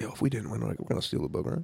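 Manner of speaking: quick, hushed whisper. Speaking quickly to the group during a ceremony, in character: whispering. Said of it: "whisper to the group".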